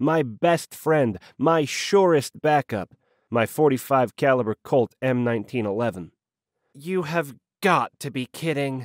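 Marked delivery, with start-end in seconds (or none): 6.7-8.9 bone-dry, unimpressed, deadpan. Watching the narrator reveal his hidden pistol, a woman reacts; dry remark. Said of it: "Elise said dryly".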